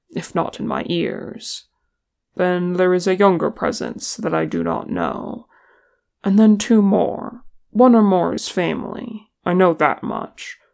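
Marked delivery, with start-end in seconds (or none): none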